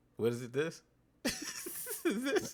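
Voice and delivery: unsure, confused delivery with swooping puzzled intonation. Imitating how another speaker just read a name: mocking an unsure reading. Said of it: "That's how you sounded".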